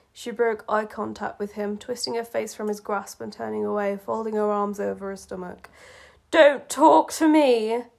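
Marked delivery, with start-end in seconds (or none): 6.4-7.9 very loud, very slow growl with voice cracking. A woman turning away from a man, trying to sound powerful: growled, voice breaking. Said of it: "She growled, trying to sound powerful, but her voice broke".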